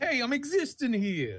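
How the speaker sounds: poor New York accent. Asked to do a brooklyn landlord accent, delivering a first line, shitty new york accent. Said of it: "shitty New York Brooklyn landlord accent".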